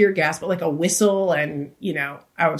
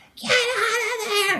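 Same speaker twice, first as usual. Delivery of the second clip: put-on, very high scream at the top of the lungs. Telling how she snapped when he went off the path, retelling a scream. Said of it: "started screaming".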